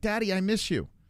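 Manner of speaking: put-on high little two-year-old voice. Retelling a two-year-old's words on the way to the studio: imitating a toddler. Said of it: "my little, almost two-year-old's like".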